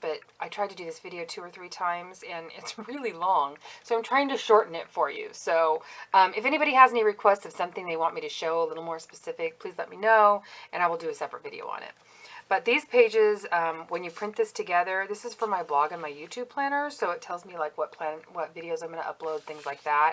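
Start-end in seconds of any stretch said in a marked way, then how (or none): 6.1-11.9 fast, hurried talk. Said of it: "I'm sorry I'm talking fast".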